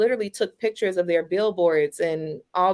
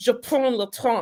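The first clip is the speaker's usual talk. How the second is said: mock French accent, higher; 4 semitones higher than usual. Retelling mocking spoken French to a French date: mocking a French accent. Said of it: "I started mocking".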